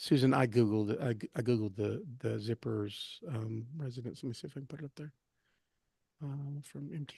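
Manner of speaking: speaking indistinctly. Searching for something online while talking to another speaker, mumbling. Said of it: "you're kinda mumbling a little bit".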